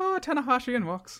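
loose put-on Irish accent, very high pitched. Recalling how the other speaker mocked them earlier, redoing it in a vague mock Irish accent. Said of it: "You did a vague one mocking me".

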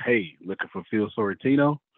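ordinary talk, nothing marked

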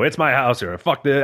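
half-hearted, mild screaming, yelled outburst. Retelling how a wrestler entered the ring: imitating Kevin Owens screaming. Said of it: "he just starts screaming".

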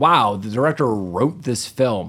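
ordinary delivery

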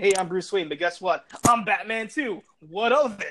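ordinary talk

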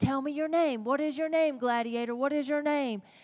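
put-on king voice, heated, badgering, demanding yell. Retelling a movie scene where a king yells at the gladiator, imitating a king yelling. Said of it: "he's yelling at Russell Crowe".

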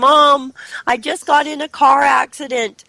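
high, loud tearful crying.

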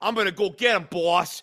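exaggerated stock Italian accent. Describing a minor character's only job, voicing Stax in an Italian stereotype accent. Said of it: "Your Italian stereotype accent is so good".

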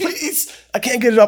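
mock very high, frantic, panicked scream. Retelling being knocked down and unable to get up, retelling a panicked scream. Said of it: "I'm screaming".

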